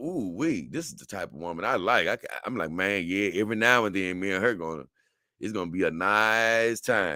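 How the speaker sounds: ordinary talk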